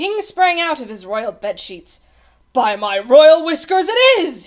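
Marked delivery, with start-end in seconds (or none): 2.5-4.5 very loud cry, climbing upward in pitch. The king springs out of bed as the Oobleck falls, crying out. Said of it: "he cried".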